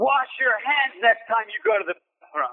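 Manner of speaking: play-acted, high, furious drunk's angry scream. Speaker acting out a drunk man who followed him to his table, retelling a scream. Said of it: "started screaming at".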